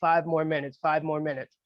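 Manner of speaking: plain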